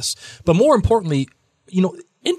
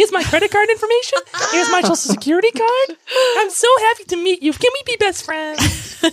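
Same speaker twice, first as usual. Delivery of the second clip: put-on puppet-like voice, higher pitched. Imitating a partner who walks up to people: Claire voice, a bit Muppet. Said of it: "going to people and say".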